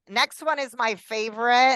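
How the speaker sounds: heavy, mock-enthusiastic sarcasm. Introducing the next term on a list: sarcastic. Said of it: "I say that very sarcastically".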